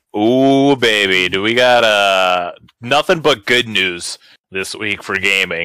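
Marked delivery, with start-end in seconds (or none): 1.3-5.6 ironic, tongue-in-cheek sarcastic tone, "got" drawn out. Podcast host leading into the week's gaming news, sarcastic. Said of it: "said it sarcastically".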